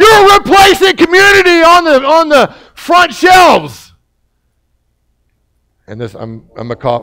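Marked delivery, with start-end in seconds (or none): 0.0-3.9 very high-pitched, loud, distant holler. Retelling what a man yelled at the speaker from across the store: retelling a yell across the store. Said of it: "he basically yelled".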